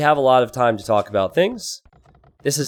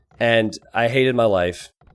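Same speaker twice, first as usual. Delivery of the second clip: usual speaking voice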